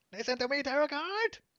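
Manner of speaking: anime-villain voice, pushed way up, very high. Teasing someone who keeps using it, doing the Marik Ishtar voice. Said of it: "he's still using the Marek Ishtar voice".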